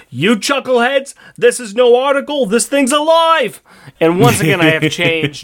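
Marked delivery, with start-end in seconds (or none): 0.2-3.6 high, loud, yelling character voice. Reading a line where the character yells at his flunkies: Bosco voice, yelling. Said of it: "he yells at his".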